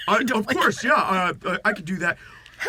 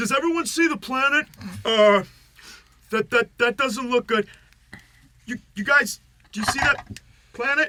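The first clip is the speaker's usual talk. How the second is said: calling out loudly, as across a distance; 3 semitones higher than usual. A player's character, still on the roof, is yelling down from roof. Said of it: "just yelling at them".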